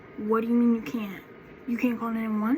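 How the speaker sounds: ordinary delivery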